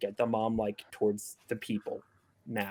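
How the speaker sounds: secret, barely audible half-whisper. Voicing a character who half-whispers to a companion so only they can hear; half-whispering. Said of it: "is whispering like specifically so that only Melog can hear".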